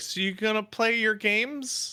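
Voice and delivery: slow, high, drawn-out voice. Retelling what a parent asked about the shows: imitating mom. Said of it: "And my mom was like".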